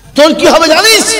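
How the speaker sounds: high, loud, booming voice.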